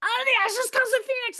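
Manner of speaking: acted shrill, very high outburst, blurted in a rush. Retelling sitting up in the dark at night, retelling own screaming. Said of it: "And I'm like screaming it".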